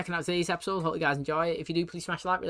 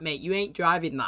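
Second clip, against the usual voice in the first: usual speaking voice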